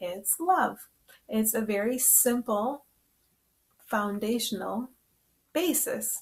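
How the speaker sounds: slow, deliberate, unhurried word-by-word delivery. Addressing listeners, the speaker deliberately says this part slowly. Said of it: "I'm just saying it slowly".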